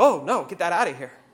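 put-on dismissive, refusing kid voice. Retelling a child spitting out broccoli: imitating a child rejecting broccoli. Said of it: "Like my child abandons broccoli ... He's like".

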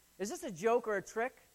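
ordinary delivery

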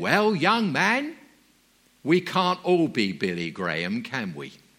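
woman speaking up mildly. Speaker retells what a hard-of-hearing woman said to him, retelling her loud voice. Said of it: "she spoke in a very loud voice".

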